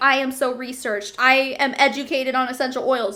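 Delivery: plain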